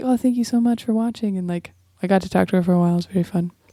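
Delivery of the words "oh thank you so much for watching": mock timid, extra-sweet, meek polite voice. Retelling how a performer talked backstage: imitating someone meek and super nice. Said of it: "very kind of meek and, like, super nice".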